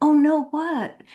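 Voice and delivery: put-on sweet voice. Retelling her reply to a man at a book signing: fakey sweet devoted-wife voice. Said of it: "I did this kind of fakey voice".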